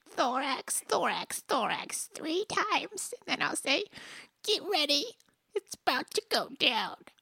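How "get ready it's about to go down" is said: put-on, slightly spotty grandpa voice, faster. Saying a line only the Thorax should hear, in a little spotty grandpa voice. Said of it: "in my little spotty grandpa voice".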